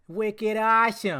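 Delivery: tentative put-on Boston accent. Talking about a celebrity who is a Boston sports fan: Boston accent. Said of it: "Is that how they do it?".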